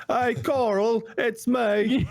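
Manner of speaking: put-on high, drawn-out British accent. Joking about British actors in American roles: British-accent Rick Grimes impression. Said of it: "That's not British, is it?".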